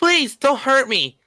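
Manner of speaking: high, whiny voice. Describing the character the speaker voiced in a friend's project, whiny Marnix voice. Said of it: "he has like this like this whiny voice".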